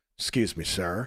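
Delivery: polite, apologetic whisper. Retelling squeezing past a seated man at a restaurant: retelling a whisper. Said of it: "And I whisper".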